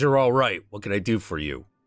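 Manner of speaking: put-on loose, kindly, easygoing Midwestern accent. Narrating a story, a character answers in a loose Midwestern accent. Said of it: "in a loose Midwestern accent".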